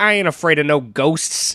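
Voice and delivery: put-on New York accent. Mocking an actor's cabbie role in a movie, bad Dan Aykroyd New York accent. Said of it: "he has the worst New York accent ever".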